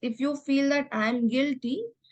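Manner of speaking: ordinary delivery, nothing marked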